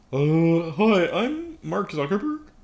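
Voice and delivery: high, loud, very slow drawl. Showing the voice heard in the head: Mark Zuckerberg impression. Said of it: "that's the voice that comes out in my head".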